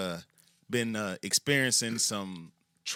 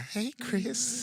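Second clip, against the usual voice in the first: put-on very high old-man voice; 13 semitones higher than usual. After comparing another speaker's voice to the Family Guy old man, doing Herbert from Family Guy voice. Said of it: "you sound like that old man on Family Guy".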